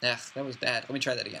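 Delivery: ordinary delivery, nothing marked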